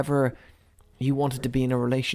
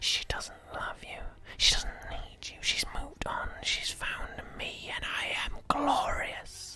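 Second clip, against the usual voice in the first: soft, needling, taunting whisper; 14 semitones higher, 8 dB quieter than usual. Storyteller voicing a voice the players hear in their heads, whispering. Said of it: "this whispering voice that goes over and over again".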